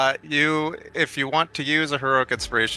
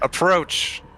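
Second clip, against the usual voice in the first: pitched-up, unearthly, supernatural otherworldly voice; 7 semitones higher than usual. Game master voices a woman summoning a player's character, supernaturally booming yell. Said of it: "she yells in that same kind of supernaturally booming voice".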